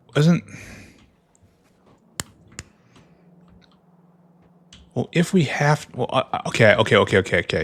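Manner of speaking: fast, panicked, flustered, tripping stutter. Stumbling over a mistake in a factory build: panicked stuttering. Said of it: "Stuttering, stuttering, panicking".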